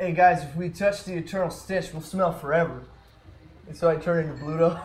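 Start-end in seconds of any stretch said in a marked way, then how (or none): 0.0-2.8 called-out raised voice. Playing a character who warns the group about the stench: screaming in character. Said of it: "scream out".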